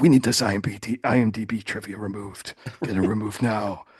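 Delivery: put-on threatening whisper. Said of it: "performative, uh, threatening whisper that he does".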